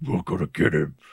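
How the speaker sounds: put-on very low voice. Retelling a thug's line from a film: imitating a very low voice. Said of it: "dude had the lowest voice".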